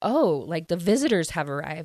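plain

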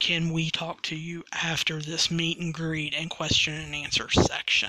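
ordinary delivery

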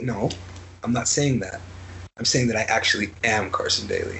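low, earnest, insistent voice.

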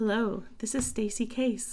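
soft, calm public-radio host delivery. Opening the podcast with a co-host, the speaker introduces themself in an NPR voice. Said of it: "Let's do our best NPR voices".

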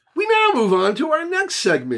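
happy, cheerful, very high-pitched sing-song delivery. A podcast host announces the move to the next segment: happy. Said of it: "He says it so happily".

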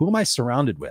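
ordinary delivery

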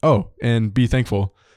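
ordinary talk

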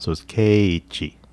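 level intonation dropping at end. Showing how to say the Japanese name: flat pitch then falling at end. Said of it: "when it should be straight, straight, straight, and down".

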